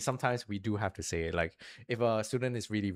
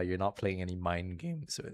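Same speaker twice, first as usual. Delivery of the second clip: cracked, breaking voice; 2 semitones lower, 4 dB quieter than usual. Talking about having conversations with young kids, voice cracking. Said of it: "sorry, my voice just broke".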